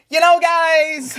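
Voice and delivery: grating, very high, very loud, guys stretched out. Mocking how a politician sounds in videos: imitating Ron DeSantis's annoying voice. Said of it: "the most annoying voice".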